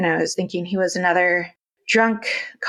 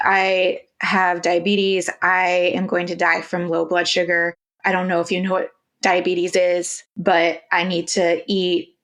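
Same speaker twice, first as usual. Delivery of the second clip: plain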